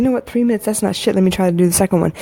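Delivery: ordinary delivery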